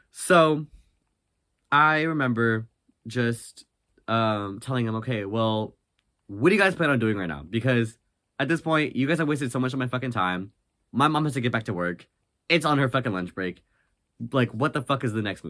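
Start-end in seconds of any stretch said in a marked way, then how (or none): none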